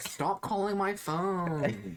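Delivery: very high, shrill, yelled screaming. Speaker retelling screaming back at repeated callers, retelling own screaming. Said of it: "and so I started screaming back".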